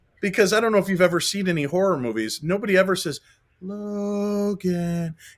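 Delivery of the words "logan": eerie, taunting, sing-songy call. Explaining how horror movies call a name: imitating a sing-songy horror-movie call. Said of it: "sing-songy is like horror movie".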